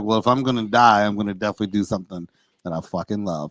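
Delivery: quiet, hushed stage whisper under the breath. Retelling what was said quietly into the mic earlier: imitating his own half-whisper. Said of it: "I kinda whispered in the mic".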